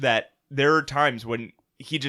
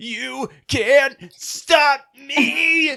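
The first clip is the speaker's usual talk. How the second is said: mock very high, loud, very slow drawn-out yell; 12 semitones higher, 6 dB louder than usual. Retelling how Ash yells at the mud when stuck: imitating Ash yelling. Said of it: "he yells at the mud".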